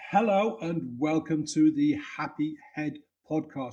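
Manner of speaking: very slow, careful, deliberate word-by-word delivery. Podcast welcome after mixing up the words before, really slow. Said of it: "I'm saying that really, really slowly".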